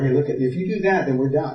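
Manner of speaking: ordinary talk, nothing marked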